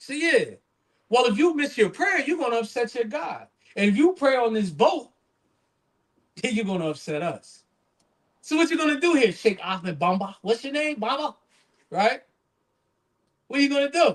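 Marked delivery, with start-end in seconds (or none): 1.1-14.2 put-on sarcastic, taunting voice, higher. Retelling how doubters on a boat challenged a sheikh: imitating a sarcastic taunt. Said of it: "they're saying it sarcastically".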